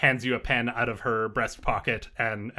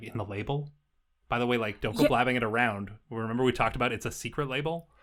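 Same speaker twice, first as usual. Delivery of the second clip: ordinary delivery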